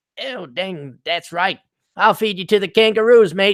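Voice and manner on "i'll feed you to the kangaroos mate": comic put-on Australian accent, loud and high. Joking about how an accent would charm girls, in a put-on Australian accent. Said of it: "he does it in an Australian accent".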